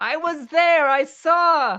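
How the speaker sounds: high-pitched loud shout with saw stretched out. A game character carries out the plan to yell it out, yelling. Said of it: "and then just yell".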